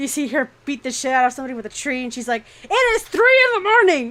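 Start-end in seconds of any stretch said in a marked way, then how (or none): 2.6-4.1 very high, very loud, shrill, enraged scream. Describing a woman who comes out at 3 in the morning: mock-angry shouting. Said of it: "she's all pissed".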